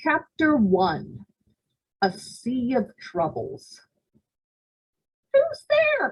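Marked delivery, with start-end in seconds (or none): 5.3-6.1 very high, squeaky little vampire-bat voice. Narrator reading a zombie's story, a vampire bat calls out, squeaking vampire bat. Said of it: "Squeaked the vampire bat".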